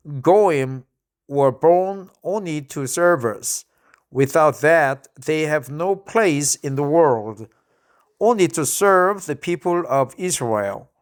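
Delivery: ordinary talk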